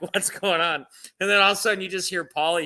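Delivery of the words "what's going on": mock frantic, alarmed, panicked, freaked-out tone. Retelling a prank call where a friend is imitating someone freaking out. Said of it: "freaking out".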